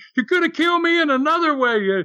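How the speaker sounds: put-on very high-pitched, furious, angry screaming. Speaker retelling how Bemis, really angry after a scare, screamed; imitating Bemis screaming. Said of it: "he's screaming".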